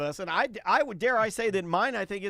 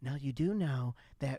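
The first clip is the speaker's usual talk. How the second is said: mock patronizing tone, lower and quieter; 6 semitones lower, 5 dB quieter than usual. Retelling how his wife warned him about the hotel parking: imitating his wife's condescending voice. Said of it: "this is the type of voice she was using".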